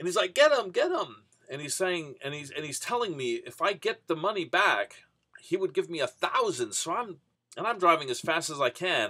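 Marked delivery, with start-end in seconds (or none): 0.3-1.1 shrill, very high, loud yell. Retelling a passenger yelling to chase the cab ahead: imitating someone yelling. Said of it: "he's yelling at me".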